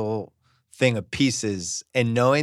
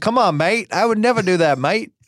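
put-on Australian accent at a raised pitch; 8 semitones higher, 4 dB louder than usual. Imitating a basketball player denying a rumor: Australian impersonation. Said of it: "I did an Australian impersonation".

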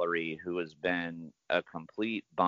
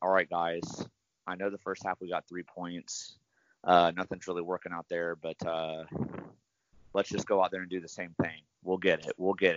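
ordinary talk

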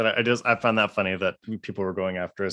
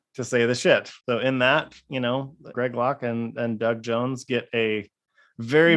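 usual speaking voice

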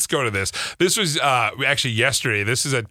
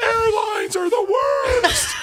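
high, slow, belted stand-up comedy shout. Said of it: "It's a Jerry Seinfeld joke".

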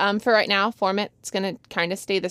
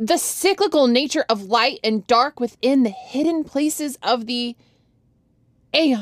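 slam poetry, spoken-word delivery; 4 semitones higher than usual. Reading a written text aloud to a co-host, slam poetry delivery. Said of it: "I'll read it like slam poetry".

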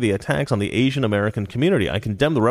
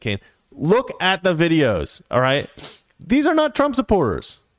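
ordinary talk

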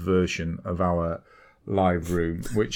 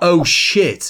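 very high, loud, shrill startled shout at full voice; 9 semitones higher, 7 dB louder than usual. Retelling seeing a push notification on a phone screen, retelling a shout. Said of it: "at the top of my voice".

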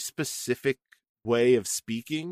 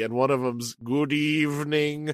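put-on monster voice, slower pace. Speaker quotes a minor movie character's line; Frankenstein-like tone. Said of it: "In this really like Frankensteinish kind of tone".

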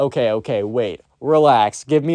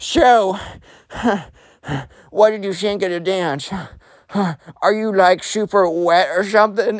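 mock out of breath, panting, gasping between words, pitched up; 7 semitones higher than usual. Retelling what an out-of-breath kid asked after his dance: imitating someone panting. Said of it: "the emo kid is, like, panting and sweating".

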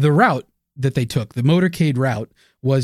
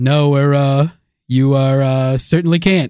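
put-on Boston accent; 4 dB louder than usual. Repeating the president's last words, mocking JFK's accent. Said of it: "as we sit here and mock his accent".

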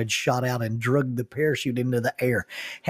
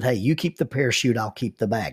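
ordinary delivery

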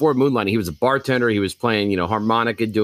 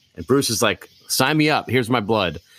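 ordinary talk, nothing marked

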